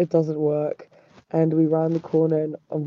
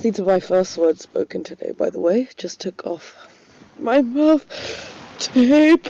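words broken up by a yawn, halting, pitched up; 5 semitones higher, 3 dB louder than usual. Speaker records dream recollections, first words of the day, while yawning while talking. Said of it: "Sorry, I was yawning".

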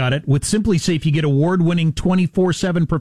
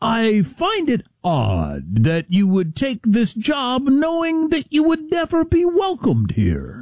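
slow, swooping delivery with "odd" stretched and stressed; 7 semitones higher than usual. Quoting a TV newsman's remark to his new boss, Scott Pelley impression. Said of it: "I'm gonna try to do it like Scott Pelley".

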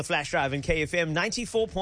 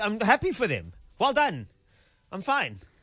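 strained, forced, swooping fake cheer; 3 semitones higher than usual. Told that two celebrities got married, speaker insists all is well in forced fake cheer. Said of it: "Ross from Friends fake 'I'm fine'".

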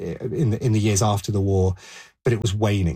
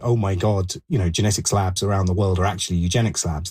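usual speaking voice

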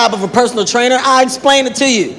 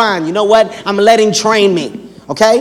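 ordinary delivery

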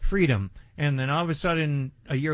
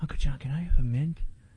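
put-on whisper. Retelling what the boy says on coming back from the hallway, imitating a whisper. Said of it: "he'll whisper".

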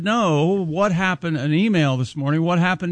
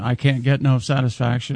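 usual speaking voice

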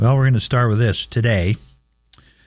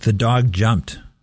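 dog stressed and said slowly. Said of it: "I emphasize each word differently".

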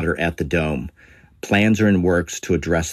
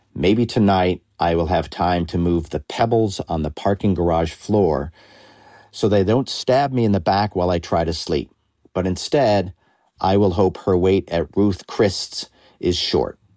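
ordinary talk

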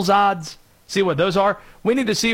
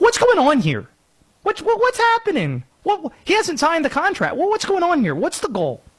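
very high parody voice with big swinging pitch; 10 semitones higher than usual. Asking why the contract is unsigned, doing a Tucker Carlson impression. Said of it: "This is me doing the impression of Tucker Carlson from S N L".

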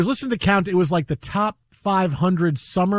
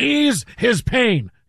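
put-on sportscaster voice, delivered much slower; 4 semitones higher than usual. Showing another way to do it after being told you sound sad, as a Marv Albert impression. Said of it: "I can do it like Marv Albert".

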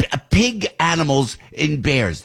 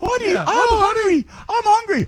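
dim-witted bear voice, sounds off, much higher. Telling a bear story, the speaker voices the bear: dim-witted bear voice. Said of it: "Why does the bear sound like he's mentally handicapped?".

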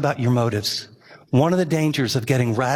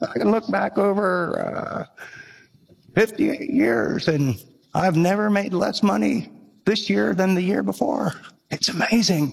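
imitated old man's voice, higher; 6 semitones higher than usual. Retelling what an old architect told the speaker: imitating an old man's voice. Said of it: "he was really old".

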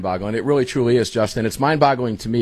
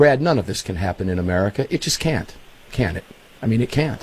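usual speaking voice

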